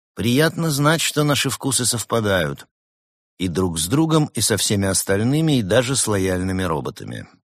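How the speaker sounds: plain reading voice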